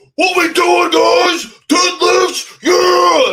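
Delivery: put-on loud yelling voice. Retelling how a loud guy burst into a deadlift session: imitating Romark yelling. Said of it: "just came and started yelling, like".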